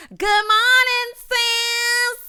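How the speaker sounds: put-on, very high, drawn-out, loud yelling voice. Retelling a scene from the show, imitating Simone yelling. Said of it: "why are you yelling?".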